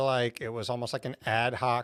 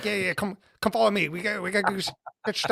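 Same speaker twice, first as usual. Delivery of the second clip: mock, way too eager, high, overexcited chatter; 8 semitones higher, 4 dB louder than usual. Retelling an IT guy rushing in to set up a laptop: imitating an overexcited coworker. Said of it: "way too excited for, like, six A M".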